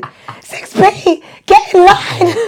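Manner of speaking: very high, shrill, loud yelling shout. Teaching PE in the playground, calling class 6B: retelling own shouting. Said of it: "This is me shouting".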